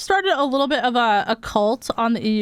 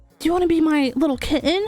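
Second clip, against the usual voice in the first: cringe-worthy anime character voice; 4 semitones higher than usual. Describing players flirting in game voice chat, cringe anime voice. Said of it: "like fucking cringe anime voice".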